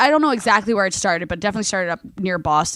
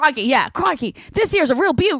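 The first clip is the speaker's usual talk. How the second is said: bad, clumsy, high-pitched Australian accent; 6 semitones higher than usual. Asked for more Australian phrases, do a terrible Crocodile Hunter impression. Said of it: "I was going to do the crocodile hunter".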